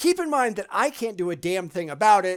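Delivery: ordinary talk, nothing marked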